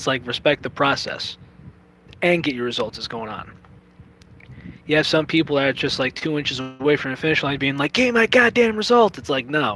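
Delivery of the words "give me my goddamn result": very high, loud, shrill tantrum. Mocking impatient people near the finish line, imitating Eric Cartman's temper tantrum. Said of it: "acting like Eric Cartman with a freaking temper tantrum".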